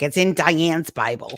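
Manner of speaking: put-on drawn-out Brooklyn accent. Retelling what Ma used to tell the speaker, in her Brooklyn accent. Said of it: "with her Brooklyn accent".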